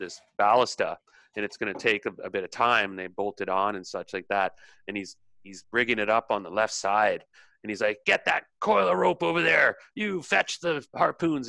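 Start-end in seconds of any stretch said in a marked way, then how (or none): 8.0-11.5 gruff barking, pitched up and rough. Voicing Grum rigging a ballista on a ship: issuing orders as Grum. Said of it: "he's issuing orders".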